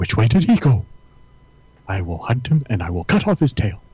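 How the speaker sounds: animated, swooping cartoon hunting dog voice. Suggesting reading a story aloud in a cartoon dog's voice: cartoon dog voice. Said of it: "And the dog is going".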